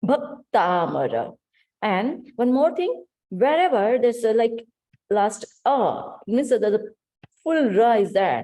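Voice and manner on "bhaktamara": Bhaktamara with first syllable bha stressed. Explaining how to pronounce a compound word: stress on bha in bhaktamara. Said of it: "let's give stress on bha".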